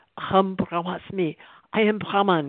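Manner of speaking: acted shouting at top of voice. Retelling how a teacher in a program suddenly shouted out, retelling a full-voice shout. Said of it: "he started shouting at the top of his voice".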